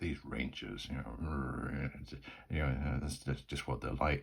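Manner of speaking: put-on muttering under breath. Retelling what Brendan says about the Rangers: muttering under his breath. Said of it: "mutters under his breath".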